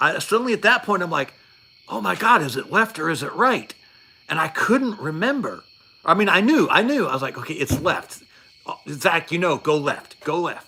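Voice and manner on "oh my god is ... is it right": acted panicked voice, much higher. Recounting losing track of which side a helicopter was on, retelling own panic. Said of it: "And I I lost it".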